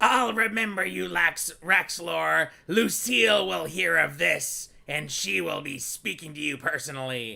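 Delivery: imp voice, cut off at the end. Voicing a dying imp threatening the player as the mace comes down: voicing the imp. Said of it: "and it says".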